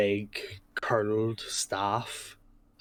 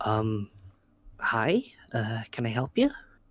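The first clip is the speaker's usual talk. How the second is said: put-on girl voice. The narrator voices a girl who turns and greets you, voicing a girl character. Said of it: "she looks up at you and goes".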